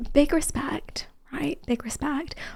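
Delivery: hushed whisper. Keeping voice low so the quiet video on the broadcast can be heard, whispering. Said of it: "We're whispering because I have to put gain".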